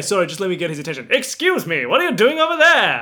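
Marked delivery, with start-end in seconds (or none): 1.1-3.0 put-on 1920s old-time movie talkie voice. A player shouts to get someone's attention in the game: 20s movie voice. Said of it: "20s movie voice".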